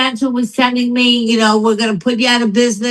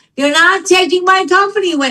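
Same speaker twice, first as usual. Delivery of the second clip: high, mock sobbing scream through tears; 7 semitones higher than usual. Woman recounting a car-service trip to Jersey; retelling a screaming, crying outburst. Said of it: "I was screaming and crying".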